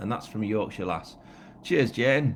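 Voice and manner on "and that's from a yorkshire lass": ordinary talk, nothing marked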